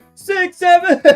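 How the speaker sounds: loud yelling, shouting. Reading numbers on labels aloud: yelling. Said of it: "I'm yelling that".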